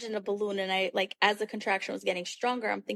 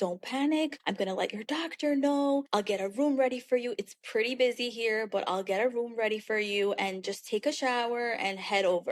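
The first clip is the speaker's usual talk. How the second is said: in-command charge nurse voice. Retelling a phone call with mom: imitating mom's charge nurse voice. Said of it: "she has her charge nurse voice".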